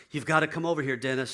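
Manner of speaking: acted frantic, panicked voice. Retelling a man's wife banging on the door Saturday morning, imitating a frantic wife. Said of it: "And she's frantic".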